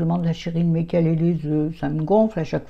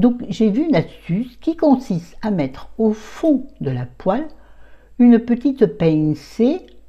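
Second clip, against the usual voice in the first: put-on, raised, high southern French accent; 5 semitones higher, 5 dB louder than usual. Explaining a frying-pan cooking tip, put-on southern French accent. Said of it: "Pourquoi je prends l'accent du sud?".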